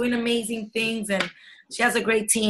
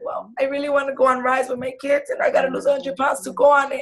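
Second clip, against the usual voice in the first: put-on crying, tearful tone; 3 semitones higher than usual. Retelling what a coach said after she started crying: imitating someone crying. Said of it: "She started crying".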